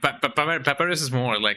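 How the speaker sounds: ordinary delivery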